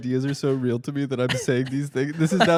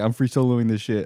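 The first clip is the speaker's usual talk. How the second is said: put-on brash, reckless eighteen-year-old voice; 4 semitones lower than usual. Arguing a live broadcast is irresponsible, voicing an imagined copycat, imitating an eighteen-year-old climber. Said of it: "and he's like".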